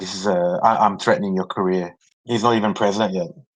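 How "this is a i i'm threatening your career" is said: usual speaking voice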